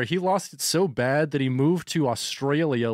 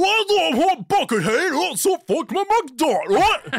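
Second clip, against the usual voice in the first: loud, very high, tipsy slurred British accent; 6 dB louder than usual. Joking about future commentary, the speaker demonstrates: drunken slurring British accent. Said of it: "I'll just be slurring everything".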